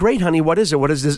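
ordinary talk

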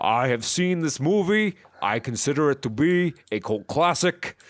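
gruff character voice. Imagining Bernie reviewing a movie: gruff Bernie voice. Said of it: "Bernie's a little more gruff".

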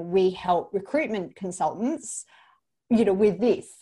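plain

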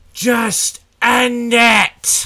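very high, very loud, desperate scream. Voicing a wounded, blinded enemy who gets up wobbling: screaming out. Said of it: "he screams out".

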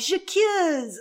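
super dramatic, high, loud accusing voice.

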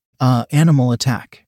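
plain

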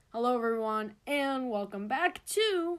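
radio-host style broadcast announcer voice. Showing how they open their intro, in an announcer voice. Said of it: "I know I have an announcer voice".

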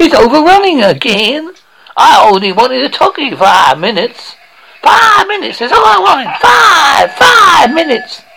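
high, loud, frantic car salesman ad shout. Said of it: "Sounds like [name]".

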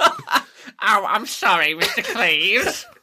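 very slow, high, swooping, drawn-out sing-song voice. Answering a teasing remark in someone else's voice: Ron voice. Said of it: "You can't do the Ron voice".

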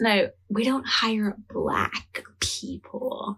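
hushed, imitated whispering voice. Retelling a character's line about a recruiter: imitating a whisper. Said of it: "she's whispering to her".

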